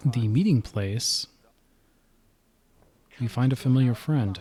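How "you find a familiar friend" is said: usual speaking voice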